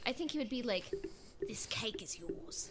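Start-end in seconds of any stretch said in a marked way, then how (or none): 1.5-2.7 breathed out in a hush. Imagining what Boba Fett would say about the cake, in a Boba Fett impression. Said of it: "amazed by her impression of Boba Fett".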